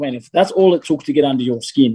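plain

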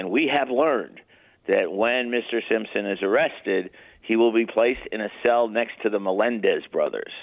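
ordinary talk

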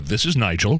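polished, mock-formal, switchboard-style professional phone voice. The speaker retells answering the other speaker's call, retelling a professional phone answer. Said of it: "answer the phone so professionally".

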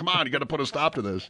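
toned-down, restrained screaming. Retelling screaming at the officials beside the coach: imitating own screaming at officials. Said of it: "screaming at the officials".

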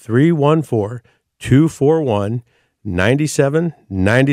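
slow, deliberate reading, each digit given its own space. Giving callers the phone number to write down: said real slow. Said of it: "I'll do it real slow".

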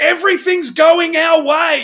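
very high-pitched, loud, barracking cheer-like yell. Recalling cheering during a lucky match, retelling a yell. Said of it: "I remember yelling out".

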